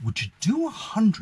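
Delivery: gentle, low-key, soft-spoken and quiet. Quoting a guy's counteroffer on the price in his soft-spoken voice. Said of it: "In that kind of voice, you know, soft spoken".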